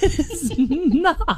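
high, slow, laughing and incredulous. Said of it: "I'm like".

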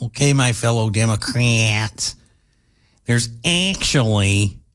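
put-on Midwest accent with Midwestern short a vowels. Repeating a woman's words, the speaker mimics her midwest accent. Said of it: "that's the way you say your short A sounds".

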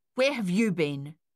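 sharp, snapping, abrupt tone. Narrating, a mother confronts her children at the doorway, snapping sharply. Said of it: "their mother snapped".

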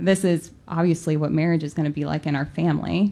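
ordinary delivery

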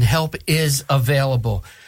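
very slow, drawn-out reading.

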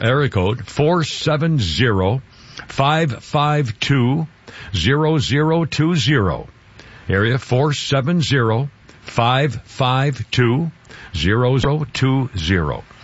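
very slow. Radio host gives the station's temporary phone number, saying it very slowly. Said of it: "I'm saying that very slowly".

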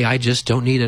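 smug, superior, self-satisfied brush-off tone. Retelling own past answer to surprised people: imitating own smug reply. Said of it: "I would smugly say".

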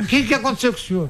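high-pitched scolding tone.

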